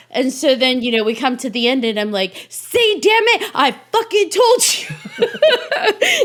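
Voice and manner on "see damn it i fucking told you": very high, very slow, drawn-out yelling. Speaker acts out being a viewer yelling at the screen, retelling own yelling at screen. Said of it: "viewer yelling at my screen".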